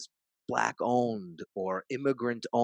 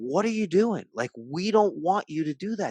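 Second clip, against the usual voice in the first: mock woman's voice, shrill, raised scream; 8 semitones higher, 6 dB louder than usual. Retelling how a woman screamed at people spray-painting a Starbucks: imitating a woman screaming. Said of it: "she's screaming".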